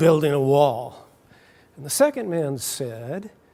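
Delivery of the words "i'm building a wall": mock grumbling, grouchy tone. Retelling a story of a bricklayer asked what he was doing: put-on grumpy voice. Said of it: "said in a grumpy voice".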